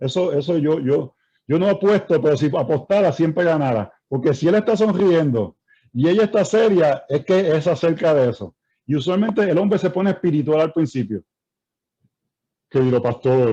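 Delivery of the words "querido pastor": put-on pious, spiritual voice, lower in pitch. A pastor imitates how a husband opens a complaint about his wife, mock-spiritual husband voice. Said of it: "cambia la voz así todo".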